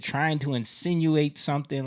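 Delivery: ordinary talk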